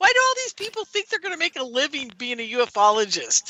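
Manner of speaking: laughing while speaking, high and swooping pitch. Giving advice to researchers, asking a question: laughing while talking. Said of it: "I'm laughing".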